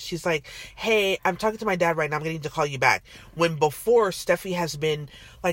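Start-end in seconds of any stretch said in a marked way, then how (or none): 0.8-3.0 put-on irritated, annoyed, curt brush-off tone. Retelling how a character answered the phone, imitating someone annoyed. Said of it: "She seemed very annoyed".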